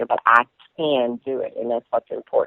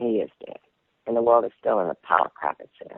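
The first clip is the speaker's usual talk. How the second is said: ordinary talk, nothing marked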